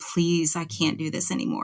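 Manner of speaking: imitated begging, pleading voice. Retelling a night call to a dad: imitating own past begging. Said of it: "I just begged him".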